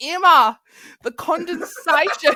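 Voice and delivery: very high, shrill, very loud Australian accent. Describing an accent she has been doing lately, australian accent. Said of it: "The Australian accent. I've been going".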